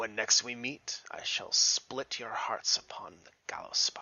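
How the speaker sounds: deep, super low, whispered menacing villain voice. Voicing a fleeing villain's parting threat: super low villain voice. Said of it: "right as he said it in the super low voice".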